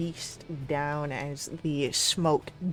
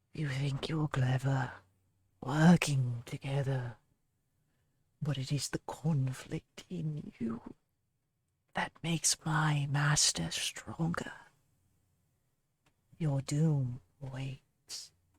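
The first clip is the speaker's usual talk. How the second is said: eerie, close whisper just over the shoulder; 4 dB quieter than usual. A voice from the shadows speaks as if just over the players' shoulders, in a whisper. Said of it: "in the last whisper that all of you can hear".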